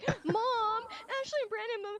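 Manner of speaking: put-on very high, drawn-out little-kid call. Recalling how a little brother rehearsed tattling to the parents, imitating him. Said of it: "He'd be like".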